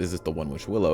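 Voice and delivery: ordinary talk, nothing marked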